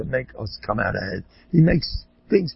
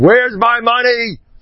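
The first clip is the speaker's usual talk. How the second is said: very high-pitched, shrill, loud screaming; 10 semitones higher, 6 dB louder than usual. Telling of losing a dropped wallet of money, retelling a scream. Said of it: "And I'm screaming".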